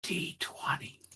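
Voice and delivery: whispered, breathy, barely voiced. Streaming, after asking chat to whisper a dice roll, the speaker whispers. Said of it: "whisper a D twenty to me".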